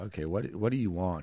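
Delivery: ordinary talk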